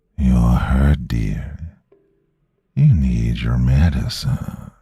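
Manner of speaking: deep, raspy voice with slow, drawn-out words. Reading a story aloud, voicing a creature that grabbed the narrator: deep raspy murmur. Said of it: "a deep, raspy voice murmured".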